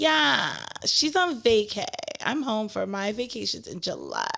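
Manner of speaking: sing-song voice with swooping pitch. Reading out a message reply from Brittany: Brittany voice. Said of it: "my Brittany voice".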